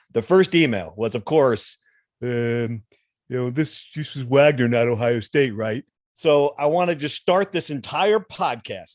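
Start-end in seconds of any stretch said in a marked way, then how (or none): 3.5-5.9 put-on dumb fan voice. A podcast host reads out a listener's first email, dumb fan voice. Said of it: "You like my dumb fan voice".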